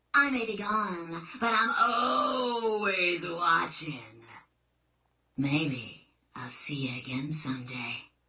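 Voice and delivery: mysterious voice. Signing off after teasing the listeners, in a mysterious voice. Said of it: "In that mysterious voice".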